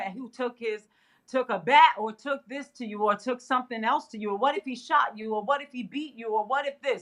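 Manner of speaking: ordinary talk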